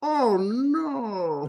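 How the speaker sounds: silly, very high put-on pet voice, drawn out. Chatting with others, the speaker imitates a voice someone often does. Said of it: "I've done that voice so many times".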